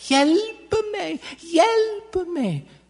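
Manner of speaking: high little voice calling out. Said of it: "that little voice coming from".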